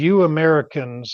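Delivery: put-on older German-accented broken English. Retelling an older German man's animated remark, imitating his broken English. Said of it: "in his broken English".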